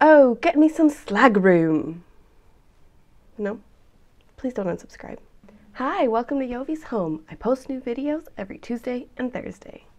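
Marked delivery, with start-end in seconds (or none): 0.0-2.0 loud, slow, drawn-out fake British accent. A video host tries out a put-on british accent. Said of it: "try with a British accent".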